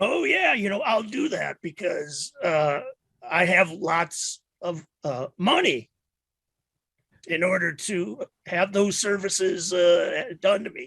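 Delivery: whiskey-rough vagrant voice. Answering a salesman in character, speaking in a voice like a whiskey-drinking hobo. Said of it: "my voice sounds a little like a hobo's".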